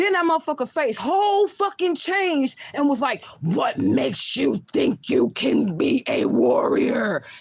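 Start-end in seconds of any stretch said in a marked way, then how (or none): 3.4-7.2 very slow, creaky, rough, creepy demon voice. Retelling a spirit speaking through a man: imitating a creepy demon voice. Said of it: "That is exactly how the fuck he sounded".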